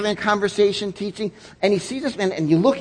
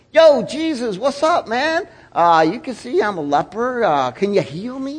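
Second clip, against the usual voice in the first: offhand, chummy, laid-back casual tone, slow; 3 semitones higher than usual. Acting out a casual request, not a serious plea: mock casual chatty tone. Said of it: "not just like a casual conversation like".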